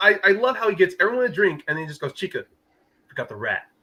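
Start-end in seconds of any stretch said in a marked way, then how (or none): 2.1-3.6 mock grave, deadpan, quiet dead-serious delivery. Describing a favorite movie scene, quote the killer's line, retelling it dead seriously. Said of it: "The seriousness he says in that tone of voice".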